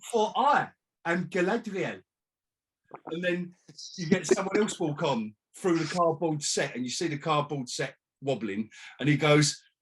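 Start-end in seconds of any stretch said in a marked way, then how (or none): 0.1-2.0 slow, high-pitched, projected stage voice. Imagining a cheap stage play, the actor playing Galadriel enters, projecting her voice. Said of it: "they're projecting their voices".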